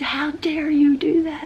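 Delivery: play-acted very high, screeching fishwife yell. Speaker retelling an argument in front of friends, screaming like a fishwife. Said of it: "like this fishwife screaming".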